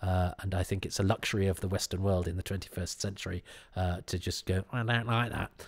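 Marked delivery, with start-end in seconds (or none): 4.7-5.5 deliberately terrible, belittling, disparaging put-on voice. Imitating people who simply refuse food, in an awful mocking put-on voice. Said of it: "putting on an awful voice to make them sound".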